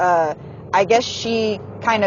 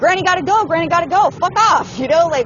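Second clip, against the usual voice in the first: yelling at high pitch. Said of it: "sorry for yelling".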